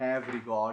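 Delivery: stress on have regard. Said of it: "I emphasize the words".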